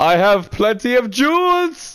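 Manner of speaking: low, proud, haughty, affronted knight voice. A knight in a game demanding a duel: haughty indignant knight.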